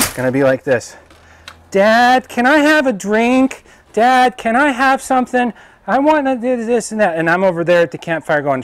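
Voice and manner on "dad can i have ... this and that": put-on very high, drawn-out, slow little-kid voice. Testing a screen door, pretending to be one of the kids: imitating a child asking dad. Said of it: "I'm gonna pretend I'm one of my kids".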